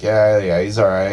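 usual speaking voice

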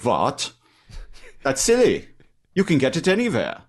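put-on German accent, animated, high, sing-song, swooping. Retelling what a customer said about bread, put-on German accent. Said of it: "I like his German accent".

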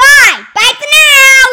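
cheery, high, loud, drawn-out calling out.

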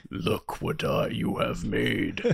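very slow, breathy, barely voiced whisper. Joking that another speaker created this, imitating Palpatine voice. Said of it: "It's like Palpatine".

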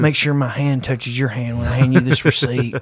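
mocking slimy flirtatious tone. Retelling how a store clerk greeted a customer: imitating a sleazy flirty clerk. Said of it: "he's like all Leisure Suit Larry type sleazy".

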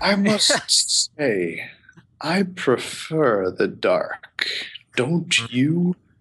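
very slow, deliberate, drawn-out dragon voice. Voicing a dragon speaking from the dark after the party's lantern goes out: green dragon voice. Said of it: "And you see a large green dragon appear".

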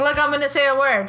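ordinary delivery

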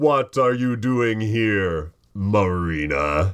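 demanding tone, Marina drawn out. In a game scene, a character confronts Marina: loud booming voice. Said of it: "a loud, booming voice".

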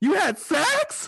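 shrill, loud, very high voice jumping an octave. Trying to hit the octave Eric was at: Eric's high-octave voice. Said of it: "Let me see if I can get my voice that octave that Eric was at".

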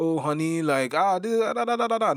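very high, drawn-out, easygoing casual call. Describing a husband relaxing at home, mimicking a casual shout to his wife. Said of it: "but shouting like".

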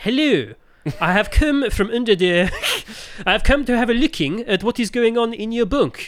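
put-on French accent, high, slow, drawn out. Acting out a man who offers to speak French, in French accent. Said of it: "I'll speak the French for you. ... he speaks in a French accent".

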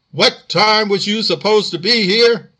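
stern, strict voice. Reading a story aloud, an officer slamming his fist: stern voice. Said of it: "in a stern voice said".

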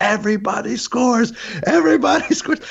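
ecstatic, very high, joyful cheering scream. Retelling watching a high-scoring match with joy: imitating a scream of joy. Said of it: "I just remember screaming at the top of my lungs".

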